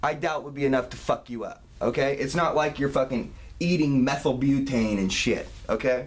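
plain

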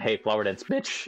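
cracking voice. Reacting to a reminder about tomorrow's flower dance, voice cracking. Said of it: "Damn, voice crack".

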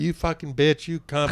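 mock furious yell. Retelling a coworker on the phone yelling at his girlfriend: imitating someone yelling furiously. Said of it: "yelling at his girlfriend".

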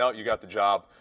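ordinary talk, nothing marked

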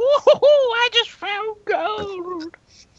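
put-on high witchy old-lady voice. Voicing a skull that finds gold, in an old witch lady voice. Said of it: "You sounded like an old witch lady".

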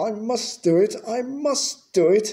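panting desperately. Reading a story, an engine struggling to climb a hill, panting desperately. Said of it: "he panted desperately".

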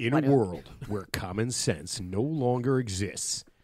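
dramatic, epic movie-trailer announcer voice. Asked to do it in the movie voice guy's style, movie-trailer announcer voice. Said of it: "are you going to do it in the movie phone voice guy? Yes".

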